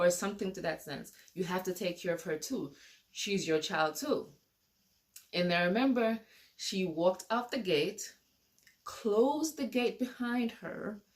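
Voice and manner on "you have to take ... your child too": ordinary talk, nothing marked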